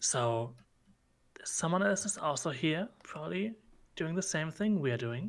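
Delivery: quiet, hushed whisper under the breath. In a roleplay scene, Dr. Bennett leans over and speaks in a whisper. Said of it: "just in a whisper".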